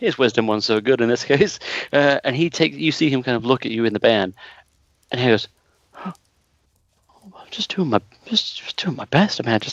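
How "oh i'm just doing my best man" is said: sudden self-doubting tone with much higher pitch. Player voicing a game character who suddenly falls in on himself, crippling self-doubt. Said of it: "falls in on himself, like sudden crippling doubt".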